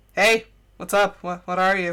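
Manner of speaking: put-on casual, unconcerned tone. Acting out a character's reply to a talking fire: imitating someone unconcerned. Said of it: "no concern, no nothing".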